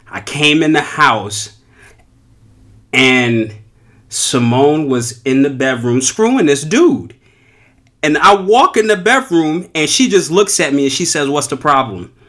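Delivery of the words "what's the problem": put-on flat, emotionless tone, faster. Retelling a dream, quoting what she said when he walked in, imitating a flat, emotionless tone. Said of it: "she said it with no type of feeling".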